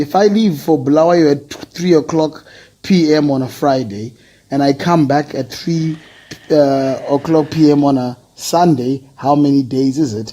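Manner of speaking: normal talking voice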